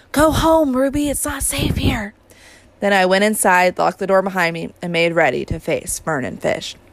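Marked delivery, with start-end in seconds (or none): 0.1-2.1 loud, high-pitched whisper, as loud as possible. Narrator, sure no one followed, warns a girl to go home: loud whisper. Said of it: "said in the loudest whisper I dared".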